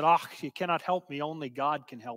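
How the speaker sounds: thick, broad Scottish brogue, laid on. Storyteller voicing a crying girl answering a man's offer of help, in a Scottish brogue. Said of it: "in her Scottish brogue".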